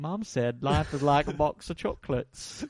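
slow, put-on British accent. Quoting a film line after a running-montage joke: put-on british accent. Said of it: "You just put on a British accent".

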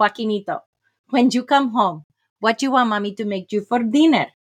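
put-on thick, laid-on Spanish accent. Retelling their mom encouraging joaquin in the institution, in a thick spanish accent. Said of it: "with her thick Spanish accent".

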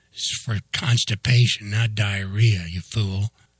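ordinary delivery

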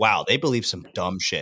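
ordinary talk, nothing marked

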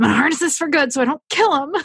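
mock frazzled tone, high and fast.

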